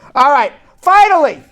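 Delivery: high-pitched loud shouting. Announcing the last news items of the day, yelling. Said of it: "I'm yelling. I don't know why I'm yelling".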